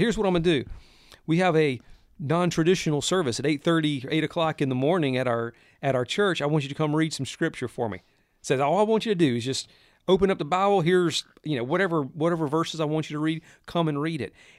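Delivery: ordinary delivery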